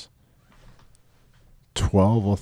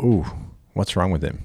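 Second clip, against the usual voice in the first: ordinary talk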